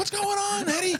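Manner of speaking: several people screaming loudly together.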